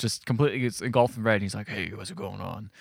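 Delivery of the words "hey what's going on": low, soft, slow, plain American voice. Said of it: "he sounds just like that too. Not any British accent".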